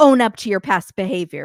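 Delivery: put-on scolding tone. Retelling how she talks to him when she turns bitchy: imitating someone scolding. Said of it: "scolding him".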